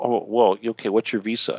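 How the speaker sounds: ordinary talk, nothing marked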